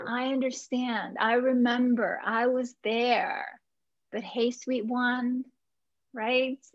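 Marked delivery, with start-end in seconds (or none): 4.1-6.6 tender, warm, affectionate, reassuring voice. Reassuring someone, calling them sweet one: warm and tender. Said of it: "I do that with the feeling, the warmth, the tenderness in my voice".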